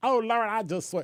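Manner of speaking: put-on Southern accent. Speaker advises on talking to police, showing what not to do, put-on southern accent.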